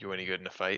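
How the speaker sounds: soft mutter to oneself under the breath. Role-playing, the speaker asks the bodyguard a question, muttered under breath. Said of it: "I'll kind of say under my breath".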